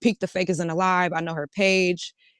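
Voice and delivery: plain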